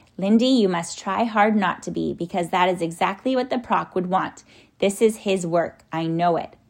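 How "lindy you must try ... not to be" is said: plain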